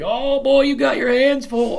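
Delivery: laughing through the words, way up high. Speaker retells the guy who drove them there, tracking her in the SUV: imitating a driver laughing. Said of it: "he's just laughing his ass off like".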